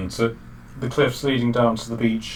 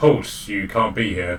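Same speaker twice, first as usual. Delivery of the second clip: ordinary talk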